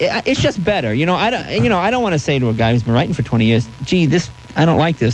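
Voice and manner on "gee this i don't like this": usual speaking voice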